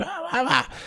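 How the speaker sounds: put-on very high babbling, like a toddler.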